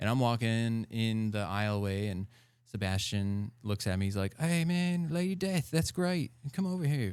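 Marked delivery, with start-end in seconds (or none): 4.4-7.1 higher-pitched, put-on British accent. Retelling what a man said on spotting him, imitating Sebastian in a British accent. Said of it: "What's that accent you're using over there?".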